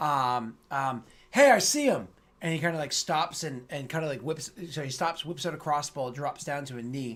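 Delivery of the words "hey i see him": very loud, high, shrill, piercing yell. Voicing a guard who spots the party and calls out an alarm. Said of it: "you hear a call out in Dwarven".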